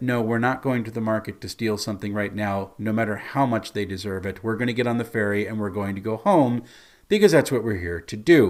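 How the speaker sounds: normal talking voice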